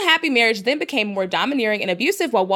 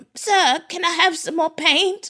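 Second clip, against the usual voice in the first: put-on boy voice, higher pitch; 7 semitones higher than usual. Acting out an imagined scene of a wife asking for paint: Oliver Twist voice. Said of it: "like, Oliver Twist in the basement".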